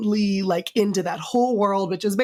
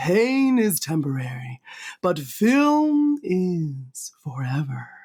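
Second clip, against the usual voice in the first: very slow, drawn-out meditation voice; 2 semitones lower than usual. Repeating a quote so everybody hears it: meditation voice. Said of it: "I'm going to say it in my meditation voice".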